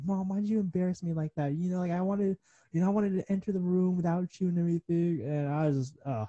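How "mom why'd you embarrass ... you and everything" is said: put-on yelling, pitched up. Retelling a yell at mom after running downstairs: imitating own past yelling. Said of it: "I yell at my mom".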